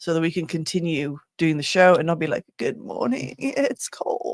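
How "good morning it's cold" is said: slow, drawn-out, whispered freezing-cold voice. Joking about doing the show in winter: freezing-cold impression. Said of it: "Like my impression of it being cold".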